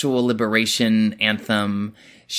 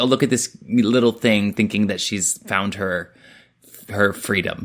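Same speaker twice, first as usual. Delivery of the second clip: ordinary talk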